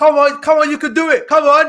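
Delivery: put-on Nigerian accent. Asked what accent he used, speaker repeats his encouragement in a nigerian dad accent. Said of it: "just like a Nigerian dad".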